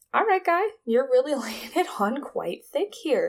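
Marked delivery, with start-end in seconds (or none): none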